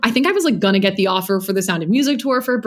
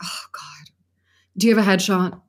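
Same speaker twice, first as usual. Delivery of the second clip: exasperated, annoyed, breathy half-whisper. Retelling a director's reply to the speaker's mother, imitating an annoyed woman. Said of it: "she's just like, so annoyed".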